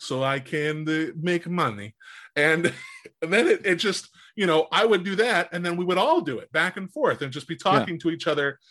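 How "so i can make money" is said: silly, ridiculous, slow put-on Russian accent. Joining the group bit of talking to each other in a ridiculous russian accent. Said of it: "this ridiculous Russian accent".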